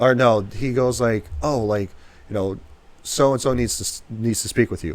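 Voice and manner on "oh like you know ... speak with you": normal talking voice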